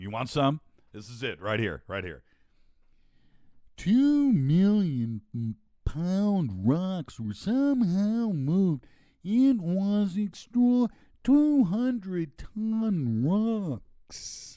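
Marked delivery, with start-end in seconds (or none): 3.8-14.6 very high, very slow drawl, word ton stretched. Doing an impression of David Hatcher Childress with his unplaceable accent. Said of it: "I do the best David Hatcher Childress impression".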